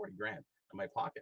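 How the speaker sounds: ordinary talk, nothing marked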